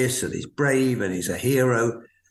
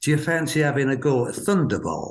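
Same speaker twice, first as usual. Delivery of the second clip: put-on spoken with Yorkshire accent. Recalling what an older man once asked you, quoting him in a yorkshire accent. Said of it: "in that lovely Yorkshire accent of his".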